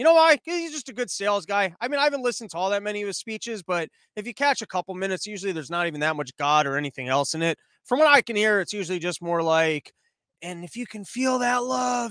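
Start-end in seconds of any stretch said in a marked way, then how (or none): 10.4-12.1 slow, drawn-out, deliberate preacher-like sermon tone. Imitating a preacher's speeches: Joel Osteen impression sounding like Biden. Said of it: "I'm making him sound like Biden".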